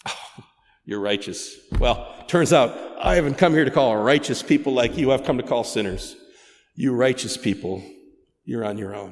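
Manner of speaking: play-acted heavy sarcasm, needling tone. Acting out Jesus answering the Pharisees: imitating Jesus's sarcasm. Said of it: "he offered them nothing but sarcasm".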